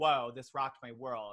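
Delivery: normal talking voice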